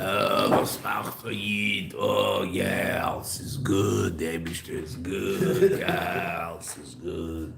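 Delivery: imitated old-time cigarette smoker voice. Joking about a croaky throat, imitating an old Yerushalmi smoker voice. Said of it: "I sound like a real Yerushalmi".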